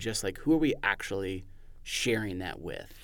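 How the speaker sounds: ordinary delivery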